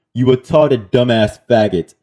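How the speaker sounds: ordinary talk, nothing marked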